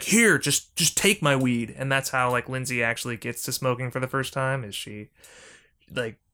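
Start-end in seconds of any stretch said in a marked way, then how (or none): 0.0-1.8 mock angry, cross, irritated tone. Recounting a scene between Nick and Lindsay, imitating Nick getting mad. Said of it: "he gets all mad at her and is like".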